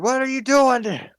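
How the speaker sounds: high shout hollered down from overhead. Game master voicing a character who just shot a T-Rex, shouting down from above. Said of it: "he's shouting down at you".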